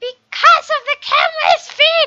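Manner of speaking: very loud, swooping, shrill goblin screech. Reading a story aloud, voicing the student Minnie answering: goblin voice. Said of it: "She turned into a goblin or something".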